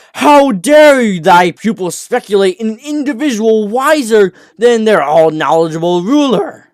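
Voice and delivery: furious, enraged, shrill screaming outburst. Narrator reads the queen's reply; enraged scream. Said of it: "screamed Queen G, enraged in envy".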